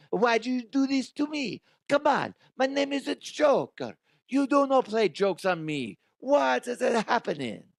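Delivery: put-on fake French accent, pitched way up. Acting out a man's reaction, the speaker voices him in a fake French accent. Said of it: "I'm making him sound French".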